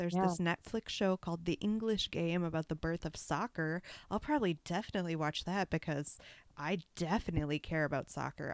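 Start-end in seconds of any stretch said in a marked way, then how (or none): 4.1-8.5 plainly sarcastic, ironic tone. Talking about what Netflix show to watch next, in a sarcastic voice. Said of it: "That is my sarcastic voice".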